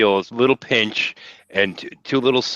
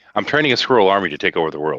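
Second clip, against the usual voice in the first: usual speaking voice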